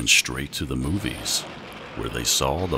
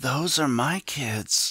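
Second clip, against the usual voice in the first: raspy, scratchy, very high-pitched voice; 12 semitones higher than usual. Narrator reads a woman spotting her kids out of school, in a scratchy voice. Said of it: "she said in a scratchy voice".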